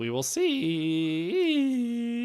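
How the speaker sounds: very high voice crack, see drawn out. Previewing a game with a new offensive coordinator, voice cracking. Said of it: "A little voice crack for you".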